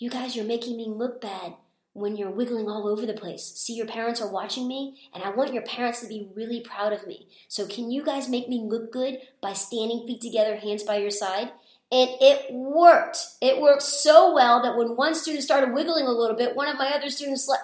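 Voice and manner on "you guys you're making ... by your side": soft, hushed stage whisper. Retelling what was said to kids huddled close: retelling a half-whisper. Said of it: "And I whispered to 'em".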